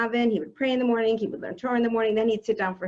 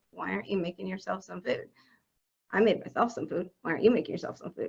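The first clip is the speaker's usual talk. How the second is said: play-acted sour, needling, very unpleasant nagging voice; 3 semitones lower, 6 dB quieter than usual. Retelling an early thought about her husband: imitating own unpleasant inner voice. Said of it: "in a very unpleasant voice".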